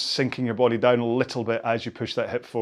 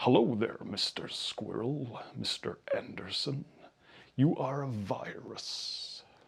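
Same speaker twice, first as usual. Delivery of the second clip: slow, hushed, whispered, sinister movie-villain voice; 10 dB quieter than usual. Speaker riffs on a video series, then slips into The Matrix baddie voice. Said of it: "now I sound like the baddie from The Matrix".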